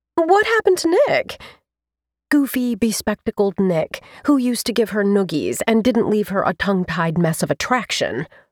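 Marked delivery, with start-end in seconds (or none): 0.2-1.4 very high-pitched, sudden blurted words. A woman, casting around for something to say, blurts out a question. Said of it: "she blurted".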